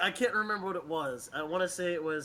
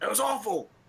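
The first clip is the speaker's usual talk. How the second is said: mock outraged critic voice. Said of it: "He's like".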